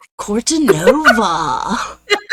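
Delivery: slow surfer-dude drawl.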